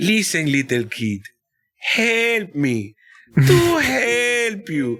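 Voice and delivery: put-on very slow, swooping, super heavy Dominican accent. Retelling what a sixth grade math teacher used to say: imitating Mister Duval's heavy accent. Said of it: "his accent is super duper heavy".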